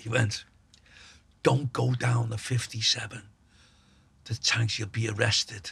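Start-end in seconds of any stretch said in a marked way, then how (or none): 1.4-5.7 whisper, lower and quieter. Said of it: "he's whispering down the phone".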